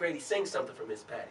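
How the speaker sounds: ordinary delivery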